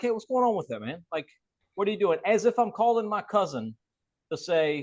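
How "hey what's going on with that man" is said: relaxed, offhand, casual, nonchalant tone. Contrasting with how typical real estate agents sound, casual and nonchalant. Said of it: "I try to sound as nonchalant as possible".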